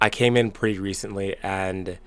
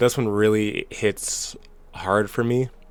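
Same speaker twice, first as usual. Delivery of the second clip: choked-up voice, catching with emotion. Telling your audience that Heung-min Son is leaving Spurs, you are getting choked up. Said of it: "I'm already getting choked up".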